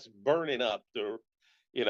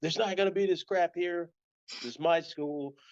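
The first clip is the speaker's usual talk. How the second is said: mock furious, high, angry shouted yell; 7 semitones higher than usual. Retelling the principal scolding him in the office, imitating the principal yelling. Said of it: "and he's yelling".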